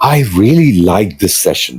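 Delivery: breathy, airy voice full of lively excitement. Showing how the voice conveys interest in a session: breathy, excited voice. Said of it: "with more air in my breath uh, or in my voice".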